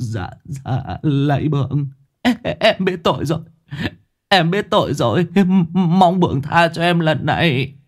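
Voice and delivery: high, shaky, trembling, stumbling stammer. A porter begging his master's forgiveness, trembling, stammering voice. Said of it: "giọng run rẩy, lắp bắp".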